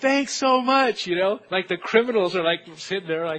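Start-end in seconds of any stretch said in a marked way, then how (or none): 0.0-1.1 high, loud, yelled, called-out voice. Retelling thanking a man while criminals sat handcuffed, retelling a yelled thanks. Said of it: "at the same time that I'm yelling".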